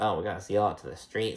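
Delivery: put-on muttered aside. Retelling what Mia said at dinner: imitating muttering under breath. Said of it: "says some shit under her breath".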